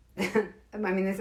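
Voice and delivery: words broken up by laughter. Starting to read a list aloud, laughing while talking. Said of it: "I'm sorry for laughing".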